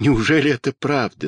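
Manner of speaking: plain reading voice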